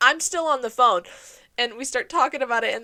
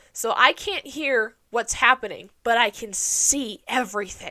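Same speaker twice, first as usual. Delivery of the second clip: ordinary talk, nothing marked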